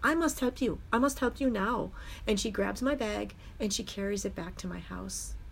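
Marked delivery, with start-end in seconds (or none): 0.0-1.9 put-on Bangladeshi accent. Retelling what a little girl said to him, little girl's Bangladeshi accent. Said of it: "with her little Bangladesh accent".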